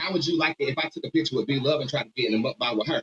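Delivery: plain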